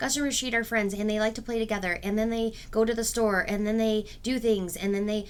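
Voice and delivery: one unbroken run-on string, no pauses between ideas. Showing how a story sounds without punctuation: ideas run together without pauses. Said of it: "our story sometimes sounds like this".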